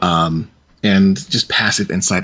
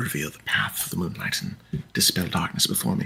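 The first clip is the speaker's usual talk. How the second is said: very quiet, fast, muttered words; 3 semitones lower, 12 dB quieter than usual. Voicing a character saying a quick prayer: quick prayer under her breath. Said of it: "quite under her breath, but quietly and quickly".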